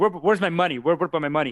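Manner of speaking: put-on frantic rant. Retelling a movie scene where a character has a meltdown: imitating a meltdown. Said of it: "he's having a meltdown, and he's like".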